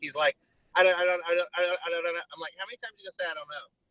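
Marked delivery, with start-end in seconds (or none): 0.7-2.3 acted panicked, frantic, words repeating on a loop. Recounting a late phone call, acting out the caller's frantic words. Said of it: "He was frantic".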